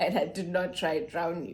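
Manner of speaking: plain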